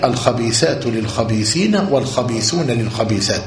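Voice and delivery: ordinary talk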